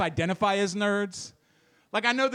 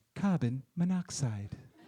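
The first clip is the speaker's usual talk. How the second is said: very low, calm, soothing British woman's voice; 7 semitones lower, 5 dB quieter than usual. Woken from a nap on the couch by an alarm, in a soothing British woman's voice. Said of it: "a soothing British woman's voice saying".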